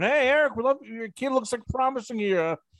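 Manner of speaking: high, eager recruiter-style pitch voice. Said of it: "calling you, going".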